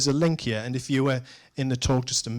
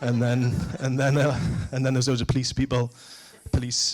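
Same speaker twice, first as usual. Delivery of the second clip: ordinary talk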